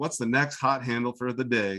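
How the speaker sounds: ordinary talk, nothing marked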